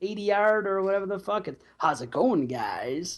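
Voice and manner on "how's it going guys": unhurried, slow, deliberate drawl, dubbed-over sounding voice. Imitating the Toxie voice from the movie: Toxie voice. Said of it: "when he's doing the Toxie voice".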